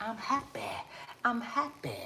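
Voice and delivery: breathy, whispered celebrity voice, breathed out. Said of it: "in my [name] voice".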